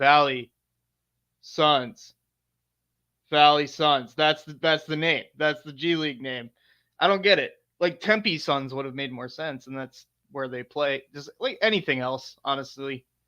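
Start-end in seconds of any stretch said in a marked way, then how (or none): 0.0-6.5 very slow, dragged-out, drawn-out musing delivery. Wondering how the name was chosen, imitating someone watching a Suns game. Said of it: "they're like".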